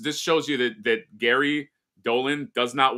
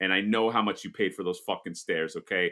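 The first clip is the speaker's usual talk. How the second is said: usual speaking voice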